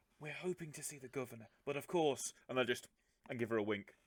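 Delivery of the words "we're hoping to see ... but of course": hushed conspiratorial whisper. Visitor telling a woman offering help that they hope to see the governor, conspiratorial whisper. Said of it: "lean in and whisper conspiratorially".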